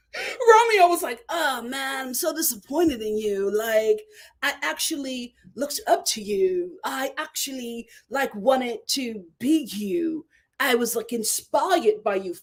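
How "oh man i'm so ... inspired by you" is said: put-on erratic, muddled, mixed, weird British-tinged accent. Quoting what Romeo said, imitating Romeo's odd accent. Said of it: "what the hell is this accent?".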